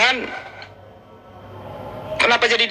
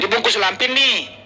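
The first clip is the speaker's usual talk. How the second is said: normal talking voice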